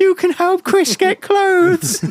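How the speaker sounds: eerie, very high-pitched ghostly voice. Joking about shopping at Tesco with no clean clothes, in a ghostly voice. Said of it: "I don't know why I sounded like a ghost there".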